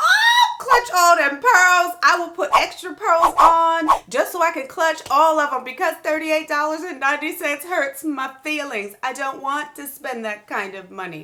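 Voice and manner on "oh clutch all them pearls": shrill, swooping, scandalized shriek of horror. Listing the cons and reaching the price, the speaker reacts: screaming in mock horror.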